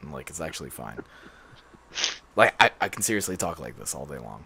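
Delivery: low, almost whispered voice. Telling the others their voice isn't really this high, the speaker shows: deeper voice. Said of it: "I can kind of actually talk in like a deeper tone".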